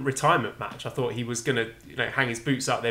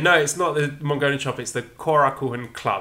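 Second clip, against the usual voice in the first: normal talking voice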